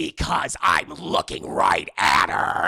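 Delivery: rough, menacing, threatening killer voice. Retelling a call where the caller's voice switches; Ghostface voice. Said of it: "And then the voice changes".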